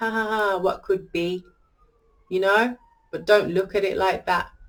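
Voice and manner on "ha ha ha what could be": acted, mocking, jeering jester laugh. Reading a tarot card, acting out its figure as a mocking jester: mock jester laugh. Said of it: "he looks like he's mocking, like he's a jester".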